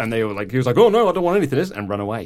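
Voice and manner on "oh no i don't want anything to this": very high, loud, scared, frightened yelp. Retelling how a valet reacted to a huge wrestler: imitating a scared valet. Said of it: "very scared of Braun Strowman".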